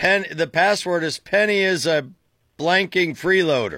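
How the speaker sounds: ordinary talk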